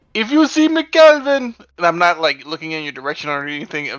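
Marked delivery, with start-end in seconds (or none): 0.1-1.5 acted shout as if from afar, higher and louder. Replying to a telepathic message by yelling aloud in character: character yelling from afar. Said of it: "at the top of my voice".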